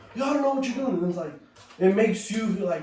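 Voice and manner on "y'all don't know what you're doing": put-on screaming voice, higher pitch. Retelling a play where a teammate screamed at his team: imitating Fahad screaming. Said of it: "he started screaming".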